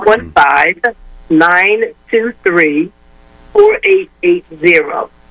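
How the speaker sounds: slow, spaced out digit by digit. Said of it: "give us the number one more time slowly".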